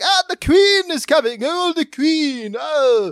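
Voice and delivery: excited, high, loud, slow herald-like announcer voice.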